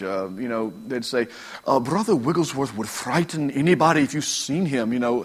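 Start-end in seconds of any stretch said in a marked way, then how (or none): 1.8-4.9 prim, very proper put-on old English accent. Retelling what an English man said about a preacher: imitating proper old English accent. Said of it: "how they talk so proper".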